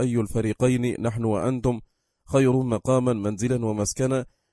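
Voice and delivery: ordinary delivery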